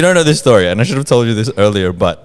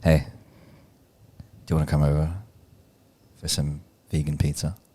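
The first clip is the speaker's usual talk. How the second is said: creepy, very quiet half-whisper; 7 semitones lower, 11 dB quieter than usual. Taking a dare to act out seducing someone, half-whispering. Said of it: "Why are you whispering?".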